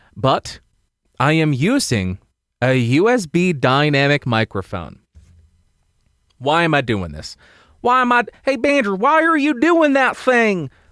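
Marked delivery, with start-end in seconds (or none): 7.8-10.6 fake Southern accent, much higher in pitch. Talking about his USB microphone setup, Southern accent. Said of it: "why did I become Southern there for a second?".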